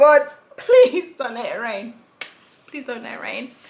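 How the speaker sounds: beseeching, imploring, pleading, begging tone. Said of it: "when you're begging".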